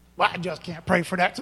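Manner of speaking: put-on cranky, irritated, angry voice. Acting out a person who objects to the speaker, in a mock-angry voice. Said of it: "That's my angry voice".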